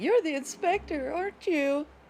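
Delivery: frightened, very high-pitched voice. Raven speaks to the inspector, scared tone. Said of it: "as she says in a scared tone".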